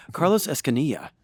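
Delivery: loud, anglicized English-speaker pronunciation of a name. Introducing a guest, saying his name like a gringo. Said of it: "like a gringo".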